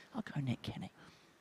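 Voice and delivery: soft, secretive whispered aside. Naming a prediction so the players cannot hear: whispering. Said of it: "I'm gonna whisper it because they can hear us".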